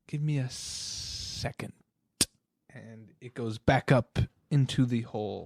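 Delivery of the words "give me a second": snake voice, quieter, slower. Narrating a scene where a snake answers the players; voicing the snake. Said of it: "The snake looks at you and goes".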